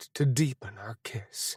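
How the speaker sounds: ordinary delivery, nothing marked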